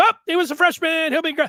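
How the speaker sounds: high, loud, flippant, dismissive tone.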